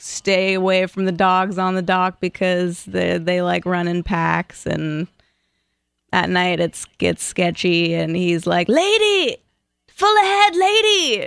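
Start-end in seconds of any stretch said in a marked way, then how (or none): 8.7-11.3 very high, slow, drawn-out screaming. Retelling a harbor pilot's orders on arrival: imitating a pilot screaming. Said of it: "screaming at me".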